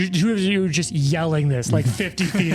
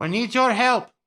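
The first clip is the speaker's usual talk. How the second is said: in-character shouting, higher, as if from far away; 5 semitones higher than usual. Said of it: "you're basically have to yelling".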